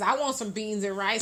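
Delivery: ordinary talk, nothing marked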